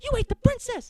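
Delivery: high, loud panicking yell.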